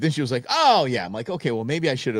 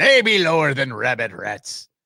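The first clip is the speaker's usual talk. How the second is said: put-on pirate voice, loud and drawn out; 2 semitones higher, 5 dB louder than usual. Joking during a debate, saying the line like a pirate: pirate voice. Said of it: "you gotta say it like a pirate".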